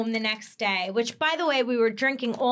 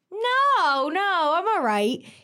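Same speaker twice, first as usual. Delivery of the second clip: put-on slurred drunk speech, very slow, pitched up; 6 semitones higher, 3 dB louder than usual. Retelling answering a phone call while driving to the airport: imitating drunk slurring.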